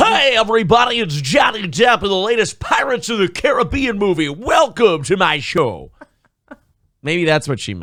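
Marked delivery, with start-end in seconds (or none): 0.0-5.9 cheesy eighties radio DJ announcer voice, pitched up. Joking about someone talking in his sleep, hacky eighties radio voice. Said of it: "talking in a hacky eighties radio voice".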